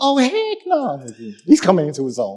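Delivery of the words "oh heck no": put-on pitched-up exclamation in an eleven-year-old boy's voice. Reading scripture aloud, imitating a child saying the phrase. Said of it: "He's like".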